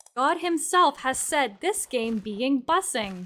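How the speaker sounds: reads like a synthetic AI text-to-speech narrator. Rereading a game review aloud when asked: put-on AI voice. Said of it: "You should read that in the A I voice".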